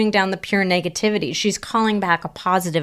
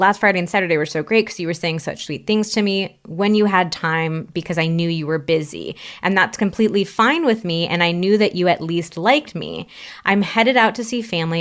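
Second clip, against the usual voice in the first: ordinary delivery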